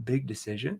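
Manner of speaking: confused, puzzled, questioning echoing tone. Showing how to answer a prospect's objection: confused tone. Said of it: "I can say in a confused tone".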